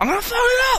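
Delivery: shrill yelling, pitched way up, very high. Retelling how a man yelled after getting kicked out, imitating him yelling. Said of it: "just yelling".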